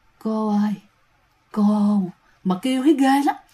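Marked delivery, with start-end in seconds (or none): 0.2-2.0 creepy, eerie wailing woman's cry, moaned out. Storyteller acting out a woman's voice moaning from the bathroom: imitating a woman's moaning cry. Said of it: "tiếng kêu này giống như là rên rỉ ... Mà kêu vậy nè các bạn".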